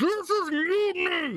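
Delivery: muffled background voice. Describing a covert-op scene, the speaker voices a background line in a very muffled voice. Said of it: "very muffled".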